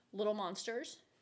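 ordinary talk, nothing marked

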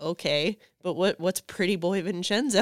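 ordinary delivery

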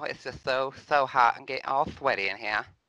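put-on, lispy Southern belle accent and voice. Performing a new character who wants social-media followers, lispy Southern belle voice. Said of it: "The Lispy Southern Belle, y'all".

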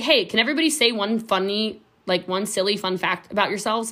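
normal talking voice

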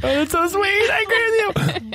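very high, teary voice, talking through crying. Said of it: "I'm actually crying".

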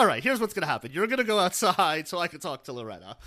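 usual speaking voice

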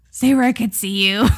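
put-on ominous, threatening, menacing delivery. Quoting a line from a drama to another speaker: menacing Ji Chang-wook quote. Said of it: "It sounds menacing the way you say it like that".

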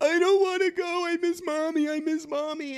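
very high, slow, weepy crying child voice, put-on. Retelling what the little boy said when called to come out, imitating a crying child. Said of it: "he was crying the whole way".

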